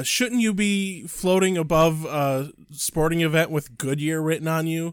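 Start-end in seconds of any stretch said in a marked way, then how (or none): none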